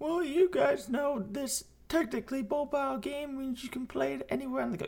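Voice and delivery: fast, high mocking voice.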